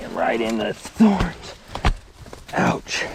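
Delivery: groaning in pain. Mountain biker goes into a thorn bush while filming: groaning in pain.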